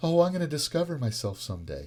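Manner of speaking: mock scornful, sneering, mocking parody tone. Parodying people who believe they will discover themselves someday: mocking imitation of people. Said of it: "I shouldn't have said it in a mocking voice".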